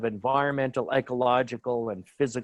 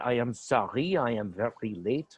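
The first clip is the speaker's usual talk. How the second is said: slow, put-on French accent, poking fun; 4 dB quieter than usual. Retelling what a late representative from France said at a UN meeting: mock French accent. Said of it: "making fun of his accent".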